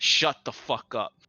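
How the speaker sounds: sharp snapping tone. Game master voicing a character who snaps at a player's character: snapping at someone. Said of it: "she snaps over at you".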